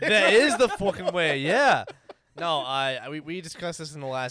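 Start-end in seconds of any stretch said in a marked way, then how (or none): 0.0-1.4 odd put-on English accent, raised and high-pitched. Talking excitedly about Star Wars, slipping into a weird English accent. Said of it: "I went into one weird accent".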